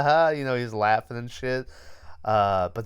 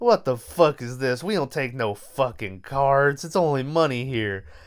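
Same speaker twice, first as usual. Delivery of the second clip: put-on southern drawl laid over Chicago accent; 2 semitones higher than usual. Retelling what a liquor store seller said to a customer, southern accent. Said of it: "I'm giving him a southern accent".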